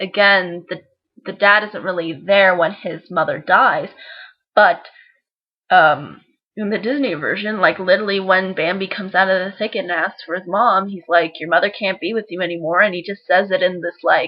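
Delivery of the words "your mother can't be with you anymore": mock cold, unemotional, harsh, flat, quick blunt delivery. Retelling the dad's line to Bambi in the Disney version, imitating a harsh tone. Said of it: "such a harsh tone".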